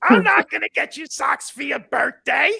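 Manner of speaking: rough, creaky put-on voice. Retelling what his wife said to him, imitating his wife's voice. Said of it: "I'm using this voice for you".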